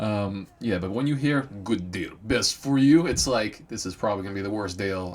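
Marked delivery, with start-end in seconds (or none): 1.4-3.1 put-on heavy, thick Russian accent, loud and slow. Retelling what a guy selling a car said, in the thickest russian accent. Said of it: "thickest Russian accent".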